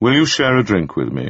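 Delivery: plain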